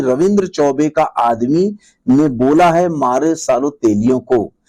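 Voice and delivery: ordinary talk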